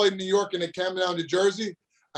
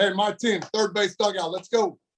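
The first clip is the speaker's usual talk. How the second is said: usual speaking voice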